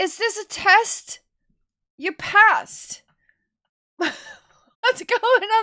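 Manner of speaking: high, loud, stunned, excited yelling in disbelief.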